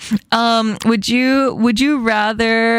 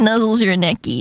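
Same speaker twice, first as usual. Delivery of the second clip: ordinary talk, nothing marked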